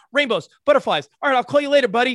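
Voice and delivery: put-on rapid, manic speech. Acting out Emmy pacing on a fake cell phone, imitating Emmy talking fast. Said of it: "Really fast".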